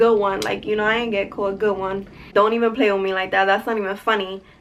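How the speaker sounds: normal talking voice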